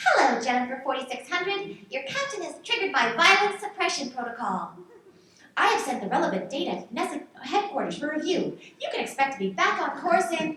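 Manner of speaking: corporate marketing assistant system voice. A station marketing system answers a ship's AI about its captain, in a marketing system voice. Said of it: "She wasn't even actually an AI. She was a marketing system. / Was she one assistant? / She was a marketing system".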